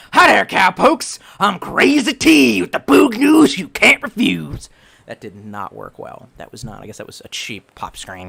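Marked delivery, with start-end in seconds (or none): 0.1-4.7 slow, rough, screeched delivery. Answering a request to do a character voice, Crazy T voice. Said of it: "please use crazy T voice".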